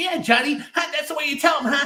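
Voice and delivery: very high, silly, dopey nerdy voice. Recalling the voices he put on, the speaker does his stupid voice. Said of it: "stupid voice like".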